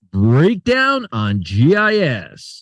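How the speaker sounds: very slow, stretched, big swooping put-on showman voice. Doing a voice in the middle of market commentary: Howard Stern voice. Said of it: "let me do my Howard Stern voice".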